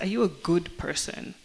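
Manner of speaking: ordinary talk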